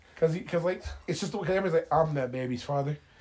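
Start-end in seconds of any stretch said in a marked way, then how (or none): 1.9-3.0 put-on grave, solemn, slow, dead-serious tone. Retelling a movie scene where everyone steps up: imitating serious men. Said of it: "They're all serious".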